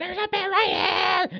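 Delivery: mock very high, frantic, panicked freaking-out scream. Retelling how his wife warned the group about a bear, imitating wife screaming.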